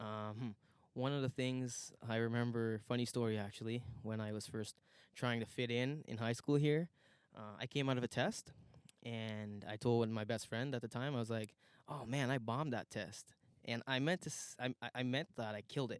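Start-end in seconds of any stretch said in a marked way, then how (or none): 11.9-13.3 excited, enthusiastic boastful tone. Retelling telling a best friend about a test: imitating own enthusiastic brag. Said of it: "the most enthusiastic bomb he's probably ever heard".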